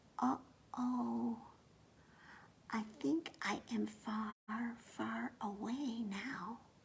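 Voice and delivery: tiny, soft, slow, very small voice. Narrator reads a lost character realizing how far away they are, in a very tiny voice. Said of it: "said in a very tiny voice".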